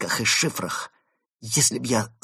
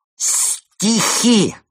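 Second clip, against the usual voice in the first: put-on drunken slur, very high-pitched and loud; 9 semitones higher, 6 dB louder than usual. A character in the story announces poems, slurred speech. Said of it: "объявил Евгений заплетающимся языком".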